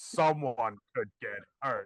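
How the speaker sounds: slow, loud, creepy impression. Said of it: "problematic A F Kevin Spacey voice".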